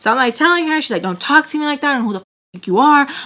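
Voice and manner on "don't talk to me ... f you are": mock tough, menacing, intimidating gangsta tone. Retelling what mom snapped back during an argument: imitating mom's intimidating talk. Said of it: "My mom talks really, really, like, intimidating".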